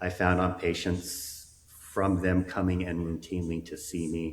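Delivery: ordinary talk, nothing marked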